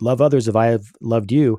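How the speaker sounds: ordinary talk, nothing marked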